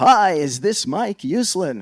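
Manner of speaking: exuberant, very loud, slow and high belting. Mike Uslan retelling a phone call he got, imitating exuberant Stan Lee. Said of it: "it is this exuberant male voice".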